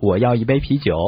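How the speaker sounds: plain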